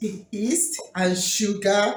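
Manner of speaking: slow, deliberate delivery.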